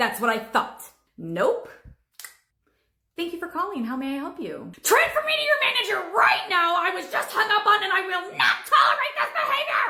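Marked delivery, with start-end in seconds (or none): 4.8-9.9 irate, demanding, very high, shrill shout. Demanding a manager from a phone agent after being hung up on: shouting. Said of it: "I can't understand you when you're shouting".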